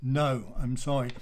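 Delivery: normal talking voice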